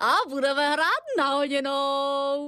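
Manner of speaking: very high, gleeful cry, oněnou stretched. Narrator reading a story, a striped sock in the washing machine: crying out. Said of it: "Vykřikla jakási ponožka".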